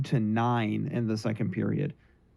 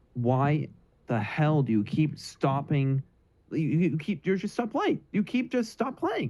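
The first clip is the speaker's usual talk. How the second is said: seething, barely contained fury with climbing pitch; 4 semitones higher than usual. A speaker ranting about a team that stops playing with a lead, barely contained anger. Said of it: "I'm shaking with anger right now".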